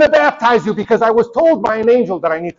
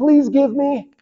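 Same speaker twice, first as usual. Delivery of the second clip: put-on baby voice, higher; 5 semitones higher than usual. Imitating people begging Jesus to feed them: imitating a little baby. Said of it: "like a little baby".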